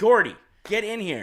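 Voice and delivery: very high, loud, stern delivery. Joking about dog owners, the speaker acts out one calling their dog back: imitating a stern dog owner. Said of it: "then they try their stern voice".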